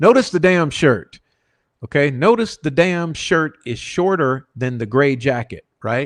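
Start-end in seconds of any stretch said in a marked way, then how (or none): 0.0-1.2 full-on, loud, high-pitched yell. Pointing out a detail in a video to viewers: yelling. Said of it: "I'm about to yell".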